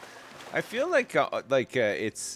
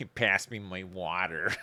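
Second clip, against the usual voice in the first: put-on American accent; 5 semitones lower than usual. Quoting a girl who can't pronounce the word's ending, in an american accent. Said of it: "That's like so fucking American".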